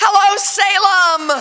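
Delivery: slow, loud, high-pitched calling out.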